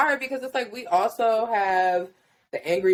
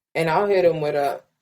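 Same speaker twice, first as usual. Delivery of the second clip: usual speaking voice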